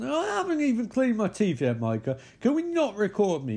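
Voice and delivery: very high, swooping, fed-up angry snapping. Retelling a film scene, imitating Katie snapping angrily. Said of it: "She's really getting pissed off".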